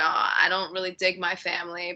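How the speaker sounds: ordinary talk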